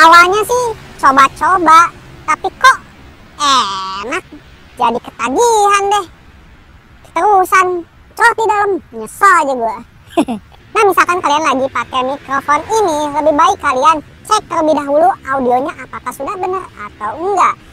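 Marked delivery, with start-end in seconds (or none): 0.0-9.8 slow, disguised, dwarf-like altered voice. Showing how an anonymous drug courier sounds in an interview: dwarf-like censored voice. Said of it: "suara kurcaci gitu atau suara sensor".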